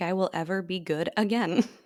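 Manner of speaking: ordinary talk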